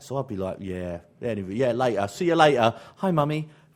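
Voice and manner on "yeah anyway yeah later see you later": put-on South East London street accent. Speaker recalls talking like everyone around them in south east london, south east london accent. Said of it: "everybody spoke like that".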